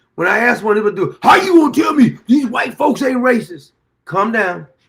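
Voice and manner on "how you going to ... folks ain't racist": mock huffing and puffing, high, loud, worked-up outburst. Imitating someone who gets asked a question and starts huffing and puffing: imitating someone huffing and puffing. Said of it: "huffing and puffing".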